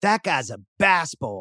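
the word "bass" leaned on hard. Retelling how Elgin said an expletive: Elgin's heavy stress on bass. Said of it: "placing most of his emphasis on the first three letters".

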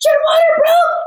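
very high, shrill, top-of-the-lungs full-lung scream. Retelling a partner waking from sleep in a panic, retelling a scream. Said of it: "starts screaming at the top of his lungs".

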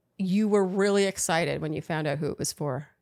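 low voice with a sarcastic tone. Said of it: "Are you being sarcastic or serious?".

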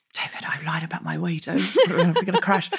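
hushed, half-whispered stage whisper. Retelling what was said to a friend on a wobbly plane: imitating own half-whisper.

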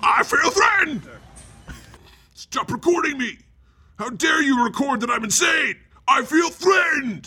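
shrill, very high, aggressive shouting. Mocking a man in a shirt who objects to being recorded, imitating aggressive yelling. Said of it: "Just the juxtaposition of aggressively yelling".

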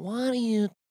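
slow, soft, sluggish, unhurried drawl. Speaker imitates how a man talks even when mad, imitating a slow talker. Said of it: "He also talks slow".

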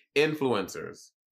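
influencers with stress on first syllable in-. Showing how the word is said: stress on in. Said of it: "my accent is on in".

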